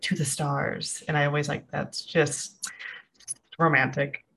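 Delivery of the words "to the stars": soft, breathy, barely voiced whisper. Retelling a line from the Titanic film, imitating Kate Winslet whispering. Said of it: "And she whispers and you're like".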